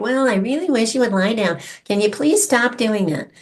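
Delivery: weak, whiny, pleading voice. Explaining how a soft dog owner talks to their dog, mock whining. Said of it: "That's just whining".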